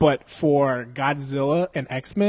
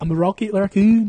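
bad put-on Scottish accent, higher and louder; 6 semitones higher, 6 dB louder than usual. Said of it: "Are you in the fucking Beatles right now?".

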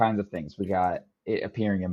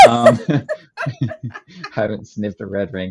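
slow speech with laughter through it. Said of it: "Why did I say it like that?".

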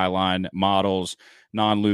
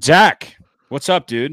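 fired-up yelling, loud and high; 7 semitones higher, 8 dB louder than usual. Fired up and greeting a buddy, yelling. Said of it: "Sorry, I'm yelling".

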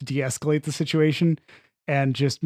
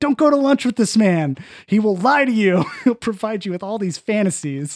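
mock hollering, high-pitched yell; 7 semitones higher, 4 dB louder than usual. Retelling a film scene where a fired worker yells down the hallway: imitating David yelling. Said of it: "still yelling at him down the hallway".

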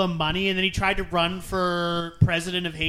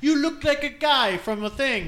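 terrible fake Russian accent, pitched up; 7 semitones higher than usual. Retelling what a Russian girl said about her bangs, in a bad Russian accent. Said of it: "Sorry, my Russian accent".

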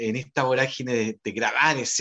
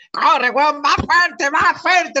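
very high, loud screaming shout; 7 dB louder than usual. Retelling how the director yelled at him to drive the horses: imitating Víctor Huerta yelling. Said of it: "empieza a gritar".

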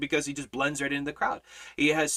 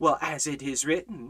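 put-on smarmy sarcastic voice. Retelling how Satan quoted scripture back at Jesus: imitating Satan, smarmy and sarcastic. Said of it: "being all smarmy and sarcastic".

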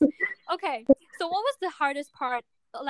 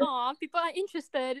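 normal talking voice

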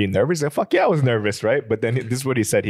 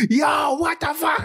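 acted loud, very high, very slow, drawn-out yell. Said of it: "I'm loud as fuck".

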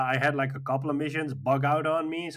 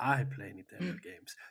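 mock snobby tone, quieter; 7 dB quieter than usual. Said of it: "You sound so elite now".

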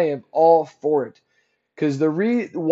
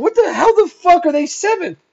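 very high, angry, laughing-mad sarcastic outburst; 11 semitones higher, 5 dB louder than usual. Recalling laughing while writing the notes, retelling angry, sarcastic laughing. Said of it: "laughing, but in an angry way and sarcastically".

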